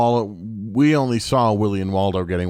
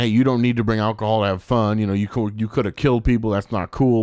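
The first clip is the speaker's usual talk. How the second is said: ordinary talk, nothing marked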